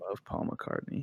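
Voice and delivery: dry, breathy, sarcastic whispered murmur. Agreeing with another speaker about loving paul mccartney: sarcastic. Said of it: "Corey's saying it so sarcastically".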